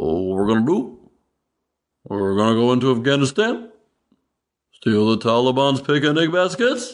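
silly, goofy animated-cartoon bear voice. Mocking Obama's speeches by doing him as a cartoon bear, Obama sounding like Yogi Bear. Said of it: "he sounds just like Yogi Bear".

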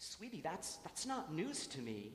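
plain

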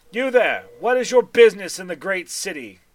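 loud, booming, commanding voice. A drow at the city gate challenges an arriving carriage, in a loud booming voice. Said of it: "goes in a loud booming voice".

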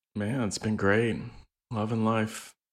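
utterly beaten-down, deflated delivery. Asked how the last couple of weeks have been, answering, sounding defeated. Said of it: "You sound so defeated".

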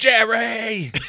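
high yell with laughter, belted out. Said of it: "And yell".

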